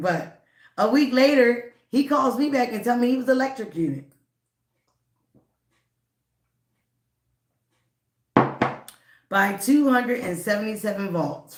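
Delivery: breaking into laughter while speaking. Telling how an ex-boyfriend called back a week later, laughing while talking. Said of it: "Sorry I'm laughing".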